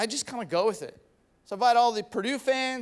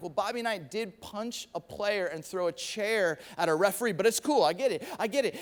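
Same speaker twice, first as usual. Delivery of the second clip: ordinary talk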